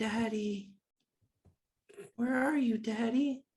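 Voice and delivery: put-on high, small little girl's voice. Voicing a small girl heard calling out: small girl's voice. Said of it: "the voice of what sounds like a small girl saying".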